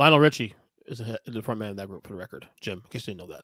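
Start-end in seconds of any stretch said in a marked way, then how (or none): 2.8-3.4 low, soft, smug condescending aside. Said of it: "it sounded like you assumed that I didn't know".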